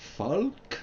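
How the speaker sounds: faint Scandinavian accent, very high-pitched. Speaker tries out different pronunciations of a name, with a hint of Scandinavian accent. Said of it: "a hint perhaps of a, a Scandinavian accent in there".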